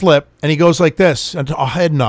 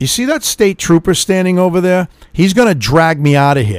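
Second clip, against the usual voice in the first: plain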